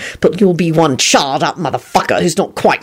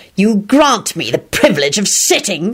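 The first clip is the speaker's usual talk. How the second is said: venomous, spat-out words; 3 semitones higher than usual. A man answering the one who gave him a tiny broken chair: spat out venomously. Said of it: "Lupin spat out venomously".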